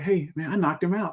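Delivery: all soft, gentle, light voice. Imagining him saying he knocked someone out, in a soft gentle voice. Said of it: "You can imagine him saying it in his voice ... it's all soft".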